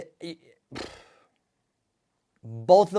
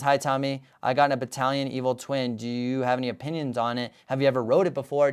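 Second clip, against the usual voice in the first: ordinary delivery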